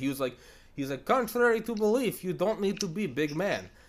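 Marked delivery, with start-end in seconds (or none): 1.0-3.6 put-on high-pitched, loud, macho Soviet-style Russian accent. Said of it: "a Soviet, like, macho".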